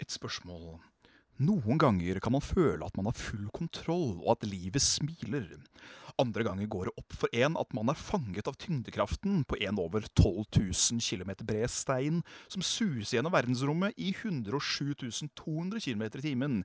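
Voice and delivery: storyteller narrator voice, as if reading aloud. Reading aloud a message someone sent in, in a storyteller narrator voice. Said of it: "Gjerne litt fortellerstemme".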